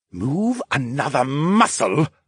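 hissed, heated voice. A voice behind the narrator threatens them as they try to stand, heated hiss. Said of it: "a heated voice hissed".

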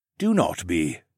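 ordinary delivery

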